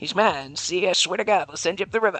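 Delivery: put-on old-time gangster movie voice. Reading a line aloud again, redoing it in an old-timey gangster movie voice. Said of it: "read that from like an old-timey gangster movie".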